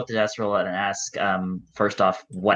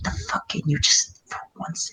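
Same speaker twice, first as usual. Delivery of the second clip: irritated cursing, muttered almost in a whisper; 9 semitones higher, 4 dB quieter than usual. Player voicing his character cursing another character, under his breath. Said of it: "mentally cursing Pasha under his breath".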